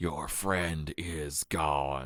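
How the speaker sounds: distorted, deep, warped, almost incomplete-sounding voice. An imposter speaking to a man whose friend lies unconscious, in a distorted, deeper voice. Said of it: "he spoke with a distorted, deeper voice".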